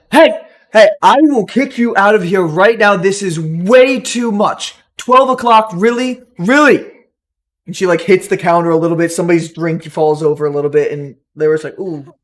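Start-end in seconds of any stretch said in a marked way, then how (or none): 0.1-6.9 play-acted loud, high, stern, drawn-out threatening shout. Narrator voices a woman warning rowdy people in the corner, a threatening shout. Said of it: "almost like a threat".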